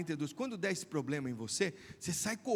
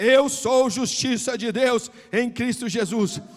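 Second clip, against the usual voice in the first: raised volume, slowed down; 6 semitones higher, 15 dB louder than usual. Retelling how he told a man to say it louder, the speaker quotes him repeating louder. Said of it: "Eu falei, mais alto".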